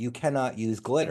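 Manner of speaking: ordinary delivery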